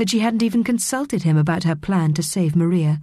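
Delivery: ordinary delivery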